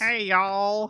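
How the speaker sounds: high cartoon father voice. Discussing a YouTuber who trolled Call of Duty players: Cleveland Brown voice. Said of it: "with the Cleveland Brown voice".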